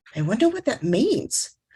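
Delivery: ordinary talk, nothing marked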